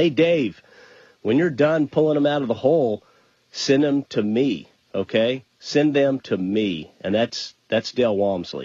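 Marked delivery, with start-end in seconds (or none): 0.0-6.9 acted-out calling out, sounding from far above. Retelling a figure on a mountain peak calling down: imitating someone yelling down. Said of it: "he's shouting, and he's yelling down".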